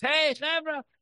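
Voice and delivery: acted, very high screamed call. Retelling how a guy called back men walking past the building, retelling a scream. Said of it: "he's screaming to them in Hebrew".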